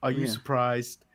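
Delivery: put-on flat monotone voice. Retelling a wrestler's taunt to his rival: monotone Bobby Lashley imitation. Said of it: "asks in the most monotone way".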